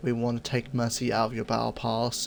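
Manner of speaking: normal talking voice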